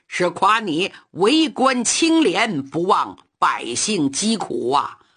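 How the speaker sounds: plain reading voice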